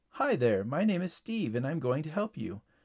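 plain reading voice

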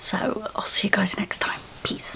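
near-whispered, quiet, hushed voice. Signing off a video while people walk around nearby: speaking quietly. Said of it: "I'm speaking quiet because I can hear people walking around".

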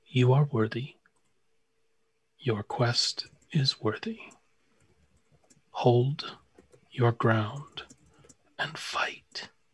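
smooth, silvery voice. Narrating a voice heard in a player's mind during a ritual, silvery smooth voice. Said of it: "a silvery smooth voice says to you".

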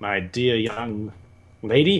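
slow, halting, stumbling professor-like gentleman voice.

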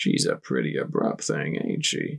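hushed, whispered, breathy mutter. A narrator reads a character remarking on someone leaving, muttered. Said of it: "Keeper muttered".

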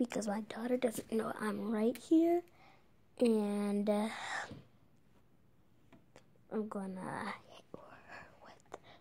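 talking low and quiet. Greeting viewers while the daughter nearby doesn't know: talking low. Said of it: "talking so low".

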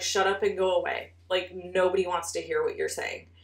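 mock angry scolding, full of rage. Speaker retells what she said to him in front of her family, retelling an angry outburst. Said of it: "I was so angry".

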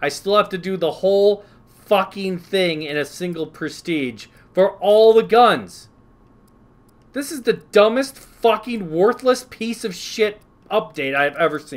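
loud, high, enraged furious ranting. Ranting about a Call of Duty update that drops your progress, so mad. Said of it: "I'm so fucking mad right now".

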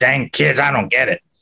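put-on cranky, grumpy old curmudgeon voice. Joking about sounding like an old curmudgeon: old curmudgeon voice. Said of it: "I kinda do sound like the old curmudgeon guy".

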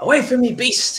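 shrill, very high-pitched battle yell. Voicing a character slashing at a wolf with a hand axe: yelling in character. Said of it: "he yells out".

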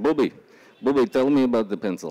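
put-on Israeli-accented speech. Retelling what an Israeli man said handing him a pencil, Israeli accent impression. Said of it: "I'm going to do my best Israeli accent".

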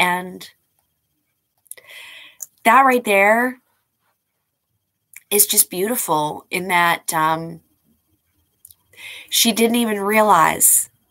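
voice holding back tears. Speaking about a late mother-in-law, holding back tears. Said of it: "I'm trying not to cry".

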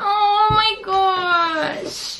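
slow, tearful crying. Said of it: "Not me crying".

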